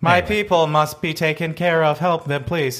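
flat, deadpan, machine-like monotone. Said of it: "like Stephen Hawking's voice".

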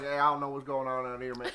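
put-on, drawling American Southern accent. Act out Marco calling the cops and disguising his voice, in a Boomhauer-style Southern drawl. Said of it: "puts on his best Southern drawl".

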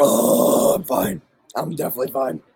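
slow, teary, tearful voice. Recovering after food went down the wrong pipe: recovering from choking, teary. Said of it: "I'm just crying a little bit".

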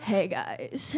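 husky, breathy, smoky, sexy whispered rasp. Retelling how a woman greeted the room, imitating a raspy, smoky sexy voice. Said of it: "this most amazing voice".

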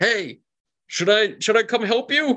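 very high-pitched, loud yell. Voicing a character calling from behind a podium: Erlade yelling. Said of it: "and he yells".

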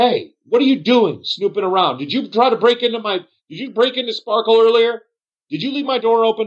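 shrill, very high accusing yell. Narrator voicing a bartender who confronts the group, yelling at them. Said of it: "the bartender is yelling at you guys".

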